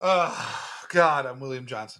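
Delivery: fed-up exasperation. A co-host introducing himself on a movie debate podcast, exasperated. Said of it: "You sound so exasperated".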